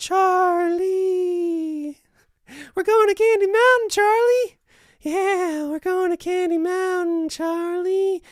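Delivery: very high, loud old-cartoon voice, a name drawn out. Streamer watching viewers' emojis bounce around the screen, imitating a cartoon voice. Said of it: "Now I sound like that cartoon".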